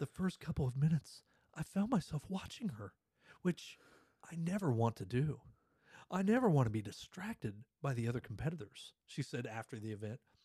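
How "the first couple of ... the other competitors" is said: theatrical, dramatic, swooping reading. Reading a competitor's quote from a news story aloud as a dramatic reading. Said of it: "I'm going to put some drama in it".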